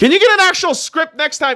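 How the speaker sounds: very high, loud, shrill yelling. Speaking to someone who then asks not to be yelled at: yelling. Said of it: "Can you not yell at me".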